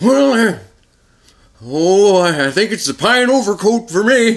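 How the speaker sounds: very high, loud, mournful put-on old-timey voice. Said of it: "In an old-timey voice".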